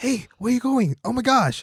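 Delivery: raspy, held-back voice, pitched very high. Describing how an actor played a role: Mark Wahlberg impression. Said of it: "he still did the Mark Wahlberg".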